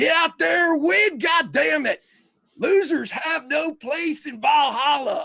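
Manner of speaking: very high-pitched hollering like a wasteland warlord. Voicing a football coach on the sideline: coach sounding like someone from Mad Max. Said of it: "football coaches sound like somebody from Mad Max".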